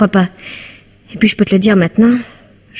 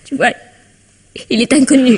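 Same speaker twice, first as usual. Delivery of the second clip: tearful, high-pitched voice, crying through the words; 5 semitones higher than usual. Telling a friend that the man is unknown at the hotel: crying while talking. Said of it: "Ne pleure pas".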